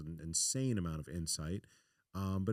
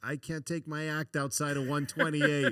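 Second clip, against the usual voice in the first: put-on thick Boston accent, much higher; 8 semitones higher, 8 dB louder than usual. Retelling a Boston comedian's complaint about his act, in a heavy Boston accent. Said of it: "He's like heavy Boston accent".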